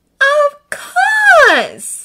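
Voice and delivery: breathless gasp, very high and loud. Reading Hermione's reply once Draco names the Order member at Hogwarts, breathed. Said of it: "Hermione breathed".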